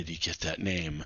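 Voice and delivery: muttered under breath. A character answering a question from Wiener Noggin, muttered under his breath. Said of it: "he says under his breath real lightly".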